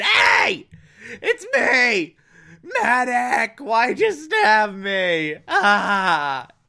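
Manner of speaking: very slow swooping pained scream, "ah" drawn out. Retelling a man stabbed with a bayonet by a half-asleep man, retelling a scream. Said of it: "the dude's just screaming".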